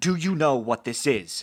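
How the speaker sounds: thunderous, loud, amplified booming bellow. In a tabletop game, the player's character Brim speaks to a cowering child: Brim's booming voice. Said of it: "makes my voice boom three times as loud".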